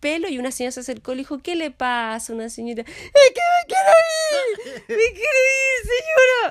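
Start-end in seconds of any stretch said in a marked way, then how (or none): 2.8-6.5 mock very high, very slow desperate yell. Retelling the speaker's reply to a lady in the waiting room, re-enacting a shout. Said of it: "Y grité".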